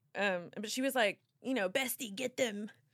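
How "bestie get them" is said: put-on voice in an Australian accent. Retelling what a best friend told her about tooth gems: imitating Jade's Australian accent. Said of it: "She's got this Australian accent".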